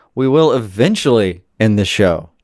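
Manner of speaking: sarcastic-sounding delivery. Speaking to a co-host on the show, sarcastic. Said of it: "I didn't mean for that to sound sarcastic".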